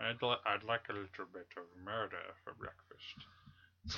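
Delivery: bad, hushed, very soft, slow, drawn-out droll voice. Describing a filmmaker's droll humor: bad Hitchcock imitation. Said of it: "my imitation's bad".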